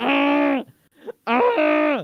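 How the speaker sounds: high, loud mock scream. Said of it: "I'm screaming into my pillow".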